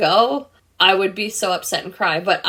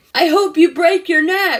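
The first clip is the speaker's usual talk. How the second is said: mock very high-pitched yelling; 10 semitones higher, 4 dB louder than usual. Retelling what a lady yelled at them while they skated: imitating someone yelling.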